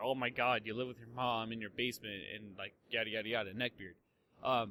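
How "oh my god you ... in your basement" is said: normal talking voice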